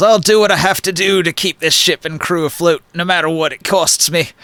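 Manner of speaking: grumbling, muttered delivery. In a tabletop game scene, the character recovers a little and speaks, grumbling. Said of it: "he grumbles".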